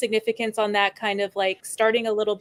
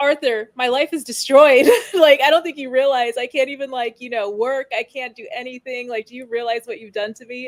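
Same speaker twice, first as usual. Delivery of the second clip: put-on tearful, crying, broken-down sobbing; 3 semitones higher, 4 dB louder than usual. Retelling a film scene where Gary testifies on the stand: imitating Gary sobbing. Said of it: "he's just, like, sobbing".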